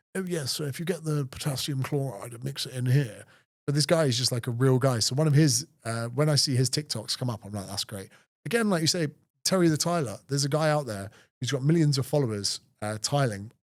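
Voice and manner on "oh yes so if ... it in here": soft, scholarly, professorial lecturing tone. Contrasting a relatable TikTok creator with typical scientists, in a mock-scholarly scientist voice. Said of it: "most scientists are so scholarly".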